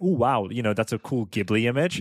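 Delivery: normal talking voice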